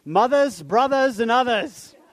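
put-on Maine accent.

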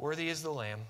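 soft gentle voice. Showing how a quiet, anticlimactic praise would sound: nice soft voice. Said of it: "saying in a nice soft voice".

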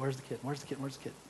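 put-on fast, quiet, hushed, impatient, antsy kid voice. Retelling waiting as a kid for a promised kitten: imitating own antsy child self. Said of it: "the antsy kid that's waiting by the side".

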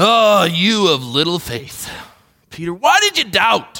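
irritated, contemptuous, disgusted, ticked-off scolding. Showing how some read Jesus speaking to Peter: Jesus, mock-disgusted. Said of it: "read in disgust into Jesus' voice".

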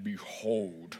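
deepest voice possible. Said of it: "Say it in your deepest voice possible".

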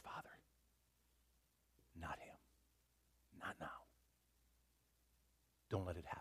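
muttering under the breath. Acting out a whispered prayer in a retold scene: muttering under his breath. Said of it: "under his breath he says".

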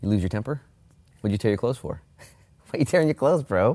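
play-acted mild, light, gentle scolding tone. Acting out a prophet questioning a king's torn clothes: imitating a gentle rebuke. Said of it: "Elisha with a gentle rebuke".

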